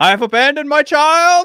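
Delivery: very high, very loud, tearful, dramatic outburst. Acting out a movie line after tearing up over a son's picture: There Will Be Blood impression. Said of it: "There Will Be Blood".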